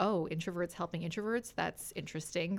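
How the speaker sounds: put-on condescending tone. Retelling a remark from someone the speaker sat down with: imitating a condescending tone. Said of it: "very condescending".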